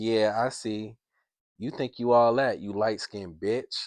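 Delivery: acted, loud, aggressive, pushy, disrespectful taunting tone. Retelling a woman's flirting at an event: imitating aggressive flirting. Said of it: "an aggressive, like, disrespectful way".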